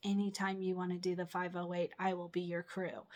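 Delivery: ordinary delivery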